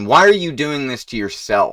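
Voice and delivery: furious, angry, accusing, demanding tone. Questioning those whose morals oppose the prosperity of mankind: angry. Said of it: "I may sound angry".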